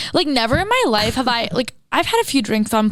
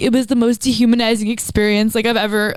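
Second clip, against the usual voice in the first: ordinary talk, nothing marked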